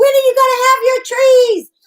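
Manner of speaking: put-on very high, carrying yell. The speaker recalls calling to someone putting up christmas lights, retelling a yell down the road. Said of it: "I'm yelling down the road".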